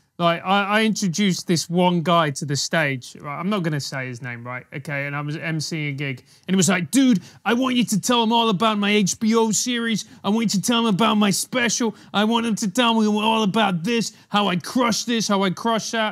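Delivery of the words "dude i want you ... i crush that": put-on American-accented voice. Retelling a comic's request before an intro: imitating an american accent. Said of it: "That's an American accent".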